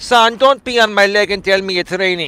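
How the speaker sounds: put-on voice with Greek accent. Quoting what his mother used to tell him, in her Greek accent. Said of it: "with her Greek accent".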